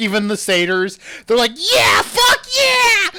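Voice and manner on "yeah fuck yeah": mock sloppy, very high, drawn-out drunken whoop. Imitating drunken satyrs cheering at a rodeo: imitating drunk cheering satyrs. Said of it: "Everyone else is just drunk as shit".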